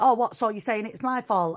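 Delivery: put-on sudden angry, defensive outburst. Retelling a relative's reply on Christmas Day: imitating someone turning angry. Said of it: "And bam, it flipped".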